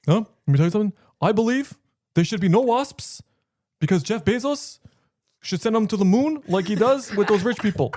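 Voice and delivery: pitched way up, loud, proclaiming voice. Doing an impression that another speaker praises: Bernie Sanders impression. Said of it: "You're actually so good at impressions".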